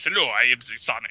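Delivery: voice dropped very deep and low, like a talking toy. Imitating what a talking Sonic toy says: deep Sonic toy voice. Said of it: "he talks in a really deep voice".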